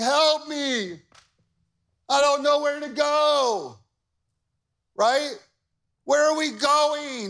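high whiny sheep voice, long drawn-out "go". Speaker, who says she sounds like a dying sheep, imitating whining sheep. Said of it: "They're just whining all day long".

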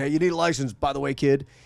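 offhand, rude, smart-aleck tone. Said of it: "a smart ass, being rude".

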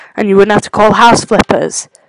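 ordinary delivery

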